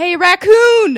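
very loud, high-pitched hollered call-out. Retelling how a guy in a holding room yelled across: imitating someone hollering. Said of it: "this guy just starts hollering at me".

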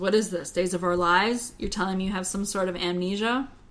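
ordinary talk

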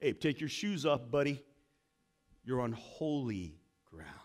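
godlike voice. Retelling God calling out from the burning bush: voice of God speaking. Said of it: "you hear the voice of the universe talking to you".

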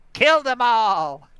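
very loud, high, put-on leprechaun voice yelling. Retelling a story and voicing the soldiers; leprechaun voice. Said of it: "that's his leprechaun voice".

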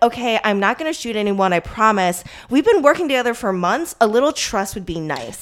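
put-on affronted, indignant, weird-sounding voice. Retelling a scene where a character gets weird and indignant: imitating indignant tone. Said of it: "she gets really weird and indignant".

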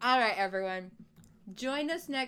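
very loud, muffled, speaking with mouth full. Host wrapping up the show for listeners, talking with mouth full. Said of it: "why did I put a cookie in my mouth?".

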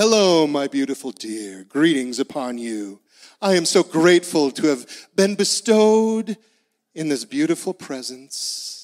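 overblown, grandiose, flowery, lofty formal manner. Acting out a greeting at home: mock lofty formal speech. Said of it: "Not with some high, lofty language".

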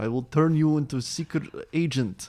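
put-on Russian accent. Discussing a movie character, quoting him in a Russian accent. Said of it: "Kind of doing the Russian accent".

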